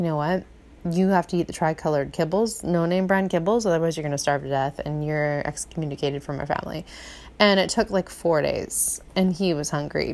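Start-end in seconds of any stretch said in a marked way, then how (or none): none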